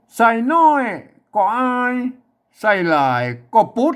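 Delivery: northern Thai accent. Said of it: "อ่านแบบสำเนียงเชียงใหม่ตะยวน".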